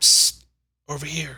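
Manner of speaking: rasping, high-pitched marionette voice. Narrating a scene, a voice calls from a cluttered corner, raspy voice. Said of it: "a raspy voice says".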